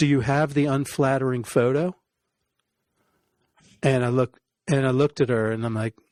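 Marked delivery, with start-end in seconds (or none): none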